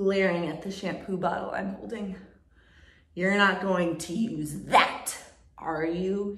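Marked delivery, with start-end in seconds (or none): 3.1-6.3 growling, menacing voice. Reading a story: he leans in, glaring at the shampoo bottle, growling. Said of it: "He growls".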